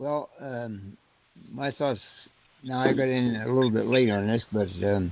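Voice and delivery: soft, barely audible talk. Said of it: "you gotta speak up a little".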